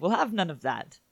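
breezy, nonchalant, casually tossed-off delivery. Repeating the comic character's line, very nonchalantly. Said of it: "just very nonchalantly".

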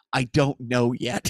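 put-on deadpan tone. Retelling how she looked right at the speaker and answered, imitating a cold deadpan.

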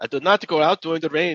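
clumsy, bad put-on German accent, very high. Retrying a French man's line after being told the accent is bad: bad German-sounding accent. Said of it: "That's more German, I guess".

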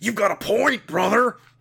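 put-on gravelly wrestler voice. Rereading a story line on request as the character: Macho Man Randy Savage voice. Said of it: "could we have you do the, that last line as Rachel, Ma-, Macho Rachel?".

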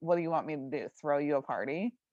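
low, completely dead-serious, no joking. Retelling a show scene where a character quips at roll call: imitating a totally serious line. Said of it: "Like, totally, you know, serious".

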